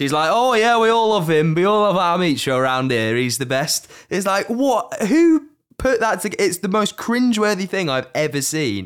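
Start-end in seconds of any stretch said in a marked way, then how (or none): 0.3-3.9 put-on accent from the north of England. Imitating the girl who first shows up in a video, in a northern English accent. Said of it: "has a northern fucking accent".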